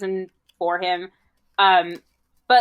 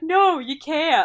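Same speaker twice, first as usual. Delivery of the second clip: mock completely serious deadpan, no laugh in it; 8 semitones higher than usual. Retelling a movie scene, answering a joking question: imitating Michael Jordan, dead serious. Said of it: "being dead serious".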